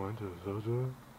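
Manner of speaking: put-on low mumbling voice. Teasing the other speaker for talking too low, the speaker mimics him: imitating a low mumbling voice. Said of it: "You're like".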